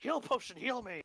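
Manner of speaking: high, screamed little-creature voice. Acting out a pet creature screaming at its owner: imitating a screaming ferret. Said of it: "starts screaming at me".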